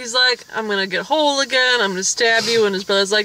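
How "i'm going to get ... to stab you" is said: ordinary delivery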